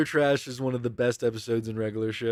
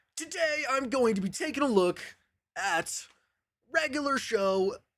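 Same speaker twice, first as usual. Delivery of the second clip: very high, pumped-up, hyped voice; 13 semitones higher than usual. Explaining their persona differs from who they are, demonstrating it: hyped-up persona voice. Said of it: "I have to like hype up my body".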